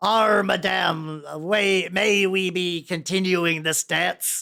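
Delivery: pirate voice, slow, words drawn out. Voicing a pirate guard asking to continue a dance: pirate voice. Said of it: "so the pirate just takes Giblet".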